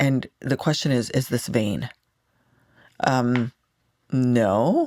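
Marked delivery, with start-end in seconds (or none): 4.1-4.9 "no" ending on an upward lilt, uptalk. Answering the question whether it is vain: rising upspeak on 'no'. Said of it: "I say that with like a no, like an up talk at the end".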